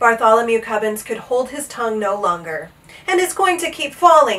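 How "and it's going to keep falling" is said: loud, high, yelled shout. Bartholomew Cubbins, unable to hold his tongue any longer, shouting. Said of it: "he shouted".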